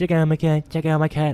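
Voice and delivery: put-on baby-talk voice, like a little baby. Mocking a YouTube community's quirky videos, talking like a baby. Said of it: "Talking like a baby".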